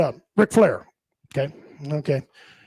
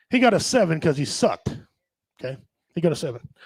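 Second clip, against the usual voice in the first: normal talking voice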